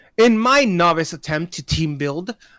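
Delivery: ordinary delivery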